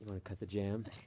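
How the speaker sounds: intimate, hushed half-whisper up close. Acting out a line said up close, acting out a half-whisper. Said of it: "you get nice and close and whispers like".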